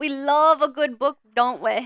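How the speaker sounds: loud fake mixed English-Australian accent. Speaker shows off a combined UK and Australian accent, English-Australian accent. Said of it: "perfect my Australian slash English accent".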